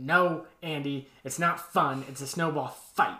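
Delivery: yelling. Retelling how Dwight yells at Andy: imitating Dwight yelling. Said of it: "when he yells at Andy".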